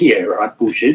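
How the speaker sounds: plain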